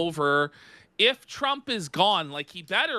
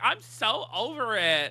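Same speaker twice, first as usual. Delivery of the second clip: put-on fed-up mocking voice, higher pitch; 4 semitones higher than usual. Mocking a clip of Nick complaining about live chat: mocking imitation of Nick. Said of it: "The way he says it is".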